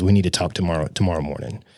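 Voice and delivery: plain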